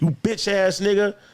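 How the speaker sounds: reenacted furious voice. Retelling confronting a man in his office, retelling angry threats. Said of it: "I'm going crazy on him".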